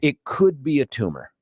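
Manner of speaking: ordinary talk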